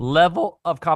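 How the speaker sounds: voice cracking up high mid-phrase. Turning back to Nuno with a question, voice cracking. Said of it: "Why did my voice crack there?".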